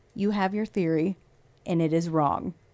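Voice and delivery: creepy, annoyed, hushed, quiet murmur. Quoting what a man said when questioned, retelling in a creepy, quiet voice. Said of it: "in a creepy, quiet voice".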